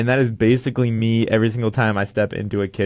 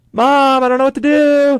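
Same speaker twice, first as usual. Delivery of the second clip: put-on very high, loud, childlike hollering yell; 7 dB louder than usual. Retelling yelling for Mom from the kitchen to make a ruckus, retelling a yell. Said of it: "and I start yelling".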